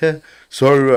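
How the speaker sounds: speaking through laughter. Retelling how a student left his lost match: imitating a student laughing. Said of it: "he laughing".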